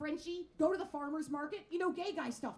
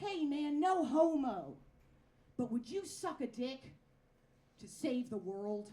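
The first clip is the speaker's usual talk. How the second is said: slow, drawn-out bro voice; 3 semitones lower than usual. Retelling a question one straight guy asked another: imitating a straight guy. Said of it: "One straight guy turns to another straight guy".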